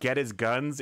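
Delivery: ordinary talk, nothing marked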